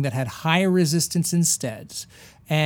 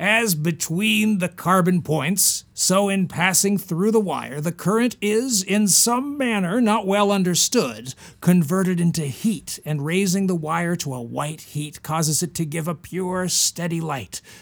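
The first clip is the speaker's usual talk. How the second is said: put-on American accent, read aloud. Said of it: "I haven't been using my American voice".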